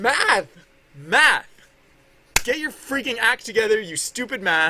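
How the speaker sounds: frustrated, out of patience. Scolding math after a calculation goes wrong: exasperated, out of patience. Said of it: "I've lost my patience with mathematics".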